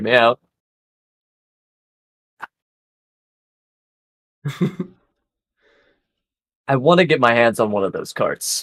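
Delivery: secretive, stage-hushed, confiding tone. Pitching an idea to the others, in a hushed tone. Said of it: "in a hushed tone".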